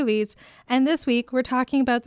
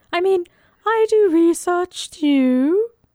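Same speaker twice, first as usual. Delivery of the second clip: bad fake English accent, higher, louder; 7 semitones higher, 4 dB louder than usual. Podcast co-host insists she does research too, in a really bad English accent. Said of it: "it's a really bad Scottish accent Wait, no, shit, English".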